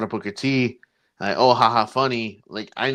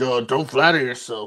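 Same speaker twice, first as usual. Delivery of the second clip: raspy voice drawn out slowly; 2 semitones higher than usual. Trying out a Shawn Michaels voice: Shawn Michaels voice. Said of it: "I tried to do a Shawn Michaels voice".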